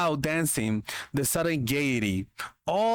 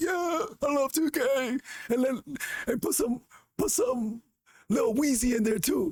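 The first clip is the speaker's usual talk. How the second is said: put-on elderly grandma voice; 10 semitones higher than usual. Acting out Granny in a joking bit, in a put-on old grandma voice. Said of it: "You you play two K?".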